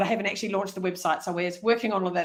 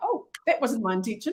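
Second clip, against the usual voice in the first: normal talking voice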